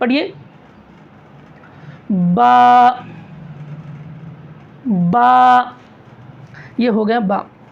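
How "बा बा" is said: loud, wide open-mouthed "ba". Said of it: "मुंह खोलना भी है".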